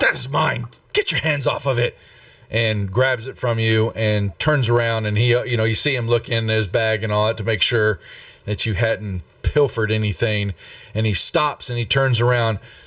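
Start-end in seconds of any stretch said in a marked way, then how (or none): 0.0-2.0 irritated, put-out, annoyed tone. Narrator voicing a man who snatches his item back from you, scowling. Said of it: "scowls quickly at you and says".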